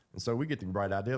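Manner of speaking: plain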